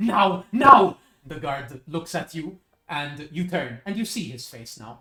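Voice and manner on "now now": frantic, panicked shout, high and very loud. Narrating to the player, voicing the shocked judge ordering the guard: panicked command. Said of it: "put her in the tomb".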